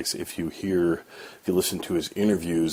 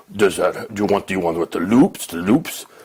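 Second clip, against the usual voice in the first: strange, loud, dumb big-lunk thug voice; 7 dB louder than usual. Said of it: "doing a strange voice of a big thud, thug".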